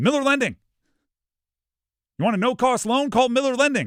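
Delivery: bright, energetic, peppy announcer voice, very high pitch. Speaker tries saying an ad line with pure pep and energy. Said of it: "say this with just pure pep and energy in my voice".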